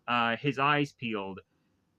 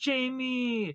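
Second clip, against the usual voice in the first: high-pitched mock yell. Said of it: "Turbo Man ends up yelling out".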